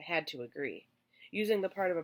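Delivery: ordinary delivery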